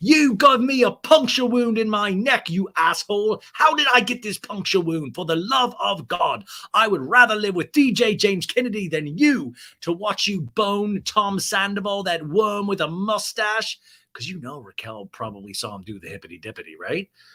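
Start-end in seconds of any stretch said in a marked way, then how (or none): 0.0-13.8 high, loud put-on British accent in a dog voice. Voicing what the dog is thinking in a British accent. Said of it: "has adopted a British accent".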